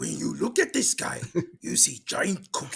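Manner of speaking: furry puppet monster voice. Taking turns doing impressions, the speaker does a Cookie Monster voice. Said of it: "I could do Cookie Monster".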